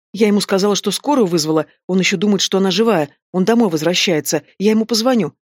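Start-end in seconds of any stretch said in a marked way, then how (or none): none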